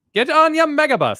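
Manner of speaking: very high, loud nineteen-forties style voice. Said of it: "Was that the nineteen forties voice there".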